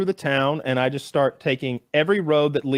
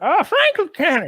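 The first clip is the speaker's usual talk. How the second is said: high-pitched hill-folk lady voice. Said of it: "And she's like".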